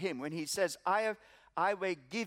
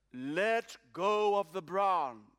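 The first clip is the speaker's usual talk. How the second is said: very deep, powerful, strong voice. Telling a joke, voicing the answer to the man on the branch: very deep, strong voice. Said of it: "very deep and strong".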